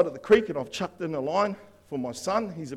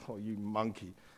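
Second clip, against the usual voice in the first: very quiet, mortified, embarrassed hushed voice; 7 semitones lower, 12 dB quieter than usual. Retelling how the thirteen-year-old son reacted: imitating an embarrassed teenage son. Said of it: "he's just embarrassed".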